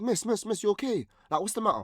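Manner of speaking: put-on overdone London accent, very high. A Londoner in Scotland retells calling out to an upset woman, exaggerated London accent. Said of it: "exaggerated the accent like thirty times more".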